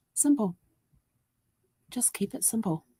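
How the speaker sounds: quiet, high half-whispered voice. Retelling what a little quiet inner voice half-whispered to her: quiet half-whisper. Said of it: "This little quiet voice just whispered".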